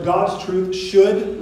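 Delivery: "should" heavily stressed, slow, drawn out, rising.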